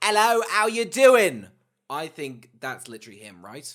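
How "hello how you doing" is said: shrill, very high, very loud, bad fake English accent. Trying an impression of the oaf, in a bad english accent. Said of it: "I can do a bad English accent".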